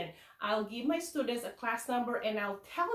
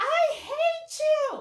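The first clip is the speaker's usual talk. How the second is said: put-on top-of-the-voice child's scream, very high, shrill and loud; 8 dB louder than usual. A teacher recalls a student with anger management issues: retelling a child's scream. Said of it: "he just screamed at the top of his voice".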